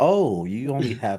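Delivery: mock snooty, condescending, pitying, talking-down voice. Acting out own remark at a friend's place, mock-condescending. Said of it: "Do you hear the condescending voice".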